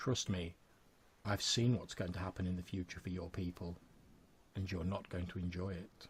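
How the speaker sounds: calm, quiet, eerie and unsettling voice. A game narrator voices Faraday looking at the player: Faraday's calm voice. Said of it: "this quite calm voice says".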